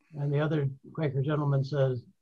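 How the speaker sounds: ordinary talk, nothing marked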